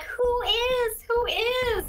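very high, slow chorus of tiny voices. Playing baby spiders answering a sprite, tiny chorus of voices. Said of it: "tiny voices say that at the same time".

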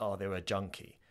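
mock, put-on spiteful delivery. Retelling how a girl called someone a junkie: imitating someone speaking spitefully. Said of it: "in a really horrible, like, spiteful way".

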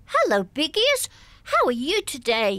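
high puppet voice, swooping and bouncing up and down. A voice actor demonstrates the puppet voice she found: Noddy voice, up and down. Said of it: "he talks like that most of the time, up and down like that".

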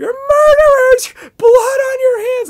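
put-on very high, very loud screeching, crying wail. Retelling what a woman said to her: imitating screechy weird crying. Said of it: "She was still carrying on".

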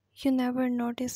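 ordinary delivery

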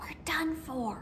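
very soft, barely audible whisper. Reading a story aloud, the porcupine's line to the other animals, whispered. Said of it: "whispered Porcupine".

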